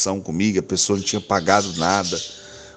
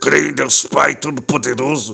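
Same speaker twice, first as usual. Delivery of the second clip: mock furious yelling, high, rough, voice cracking raw; 5 semitones higher, 3 dB louder than usual. Retelling praying alone in the car: imitating an angry shouted prayer. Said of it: "eu rezava gritando dentro do carro, com raiva".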